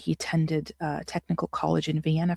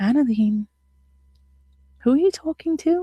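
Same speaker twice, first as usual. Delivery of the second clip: put-on gentle, sweet, high grandmotherly voice; 8 semitones higher, 4 dB louder than usual. Retelling what a grandmother said: imitating a sweet voice. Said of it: "in her sweet, uh, voice".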